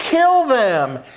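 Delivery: high, shouted-out yell. Recounting a speech about a policy, quoting a man in the crowd: retelling a crowd member's yell. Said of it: "the crowd guy yells".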